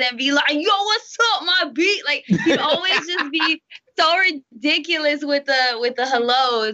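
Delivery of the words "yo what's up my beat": put-on loud, brash, boisterous New York accent, pitched up. Remembering how Griff greeted them, imitating Griff's loud New York accent. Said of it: "his New York accent, he always got to be loud and boisterous".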